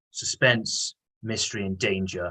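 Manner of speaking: plain reading voice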